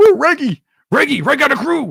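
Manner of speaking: very high-pitched, loud cartoon dog voice. Showing viewers a cartoon voice after a request: Scooby-Doo voice. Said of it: "I can do Scooby-Doo".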